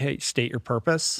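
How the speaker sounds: mock-curious, demanding tone with an edge. Retelling someone's question to the visitors, imitating curious edgy demand. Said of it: "curiosity with a little bit of an edge".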